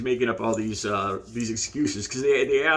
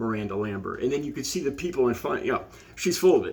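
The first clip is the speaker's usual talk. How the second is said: ordinary talk, nothing marked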